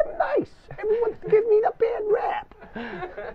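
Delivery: very high-pitched put-on cartoon rat voice. Showing how a rat character talks: rat character voice. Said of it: "that's the rat voice".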